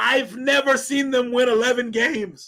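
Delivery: prepubescent-sounding crack in a high voice. Speaking to the chat about the team, voice cracking. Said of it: "see my voice cracked and everything".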